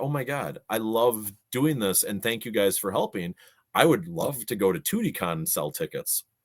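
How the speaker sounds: ordinary talk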